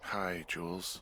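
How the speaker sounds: drowsy, tired, sleepy, just-woken delivery. Answering the radio from bed, a character greets the caller: tired voice. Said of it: "you sound tired".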